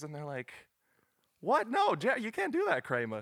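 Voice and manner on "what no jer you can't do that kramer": very high, loud, animated, swooping outburst. Acting out a Seinfeld scene: Seinfeld character impression. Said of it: "There's my impression".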